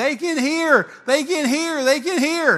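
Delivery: very high, very loud, shrill, drawn-out crying scream. Retelling a mother running up to the platform: imitating a woman screaming. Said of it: "she's just screaming at me".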